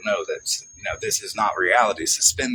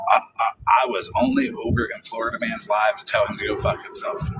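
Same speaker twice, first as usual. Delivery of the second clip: ordinary talk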